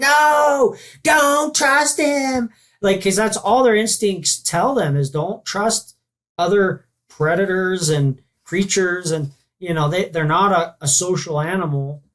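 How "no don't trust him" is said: shrill, very high shriek, "no" stretched long. Voicing an animal's instinct as a shoulder angel, screaming shoulder angel. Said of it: "He's screaming and jabbing his little pitchfork".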